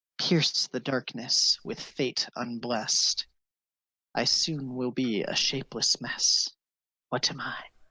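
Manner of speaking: gentle, tender, mild voice. A game master voices a winged creature speaking to the players, in a soft voice. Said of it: "you hear the same thing in a soft voice".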